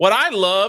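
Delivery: high, very sarcastic, dripping with sarcasm. Complaining about studios that hire people who don't know the lore: sarcastic. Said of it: "and I'm being very sarcastic here".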